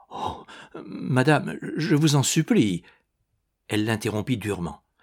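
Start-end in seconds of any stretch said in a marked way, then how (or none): 0.1-2.8 stammering, stuttering, higher and slower. Narrator reads a man at a woman's feet answering her rebuff, stammering. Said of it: "Il balbutia".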